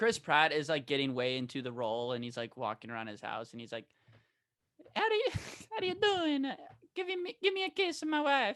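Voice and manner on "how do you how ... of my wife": put-on squeaky plumber voice, higher pitch. Imitating an actor staying in the role at home: squeaky Mario voice. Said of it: "squeaky Mario voice".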